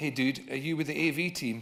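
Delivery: plain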